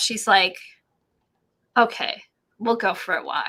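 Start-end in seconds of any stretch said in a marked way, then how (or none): 1.8-3.5 choked-up voice catching with emotion. Retelling how she gave in when the dog asked to walk: imitating someone choking up. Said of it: "she's choking up".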